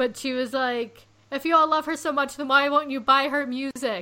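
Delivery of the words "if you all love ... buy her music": full-on, loud yelling tirade. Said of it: "she's, like, yelling".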